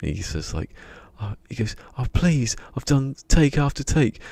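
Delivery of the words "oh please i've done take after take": very high-pitched, fed-up, exasperated tone. Retelling how he got upset with the director, retelling an upset outburst. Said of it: "gets upset with the director".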